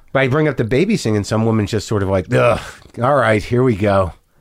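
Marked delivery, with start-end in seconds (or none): 2.3-4.1 slow grumbling with an odd bitterness. Speaker retelling a woman's reaction when babies came up, imitating weird bitterness. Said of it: "with this weird bitterness".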